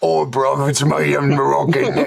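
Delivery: put-on English accent. Imagining how he would sound for the others in the conversation, do The Rock's English accent. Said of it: "I do want to hear The Rock's English accent".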